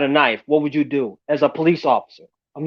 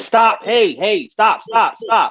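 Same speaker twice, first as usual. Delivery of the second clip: very slow, high-pitched put-on yelling; 6 semitones higher than usual. Retelling what the officer shouted during a fight: imitating an officer yelling. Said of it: "And he's yelling".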